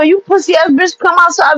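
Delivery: mild, half-voiced, goading shouted yell. Retelling yelling out a car window at someone: imitating own past yelling. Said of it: "I'm yelling out the window".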